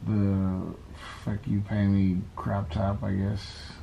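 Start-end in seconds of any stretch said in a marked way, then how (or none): none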